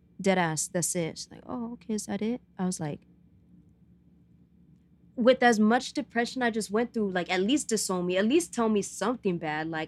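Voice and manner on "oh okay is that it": mock nonchalant, totally offhand casual tone, pitched up. Retelling mom's reaction to a coming out: imitating nonchalant reply. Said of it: "totally nonchalant about it".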